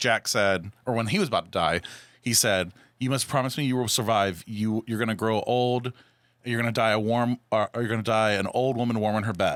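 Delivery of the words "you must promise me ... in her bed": ordinary talk, nothing marked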